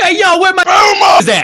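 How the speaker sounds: very loud, high-pitched holler. Retelling yelling in a neighborhood in Los Angeles: imitating own past yell. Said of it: "and yelled".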